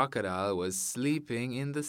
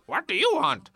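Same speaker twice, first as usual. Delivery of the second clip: very high, loud, shrill storybook monkey voice; 13 semitones higher, 8 dB louder than usual. Acting the monkey in a story as the rabbit calls up: voicing the monkey. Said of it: "and he saw Monkey".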